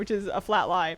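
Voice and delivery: ordinary talk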